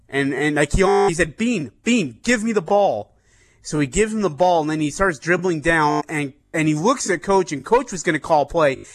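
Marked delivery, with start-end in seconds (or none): 1.3-3.1 mock screaming, slightly raised pitch. Retelling a player screaming for the ball: imitating someone screaming. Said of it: "screaming at him".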